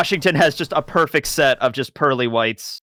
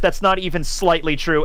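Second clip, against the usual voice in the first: ordinary delivery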